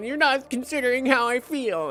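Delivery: mock grumpy, curmudgeonly grandma voice. Retelling a friend's complaint about politeness: mock curmudgeon grandma voice. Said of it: "this curmudgeon grandma who's like".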